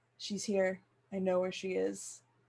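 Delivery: quiet muttering under the breath. Playing Lena sidling up to Zeke, speaking very low under her breath. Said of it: "very lowly under her breath".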